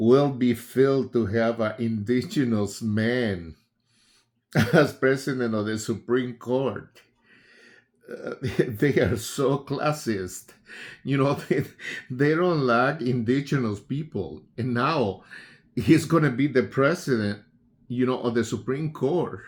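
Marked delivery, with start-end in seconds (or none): 4.7-11.6 loud, laughing through the words, can't hold it in. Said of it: "sorry for laughing".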